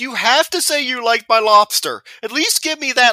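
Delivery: play-acted, very high-pitched, almost in tears. Retelling a film scene, imitating Willem Dafoe almost in tears. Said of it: "he's almost in tears".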